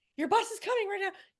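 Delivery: high, loud, hurried, urgent voice. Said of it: "She's like".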